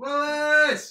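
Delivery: loud, high-pitched shout. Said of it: "I'm just shouting in the town".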